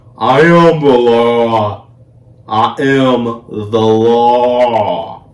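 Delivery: very slow, badly done, "law" stretched long. Retelling a film scene, quoting its famous line: bad Dredd impression. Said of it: "I said it horribly".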